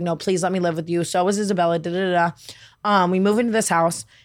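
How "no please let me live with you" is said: ordinary talk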